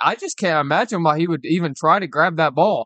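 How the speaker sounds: normal talking voice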